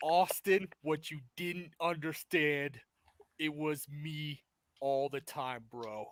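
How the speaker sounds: gloating, laid-on put-on Brooklyn accent. Imagining a wrestling reveal, playing Vince Russo unmasking himself to Austin. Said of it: "that friggin' Brooklyn accent".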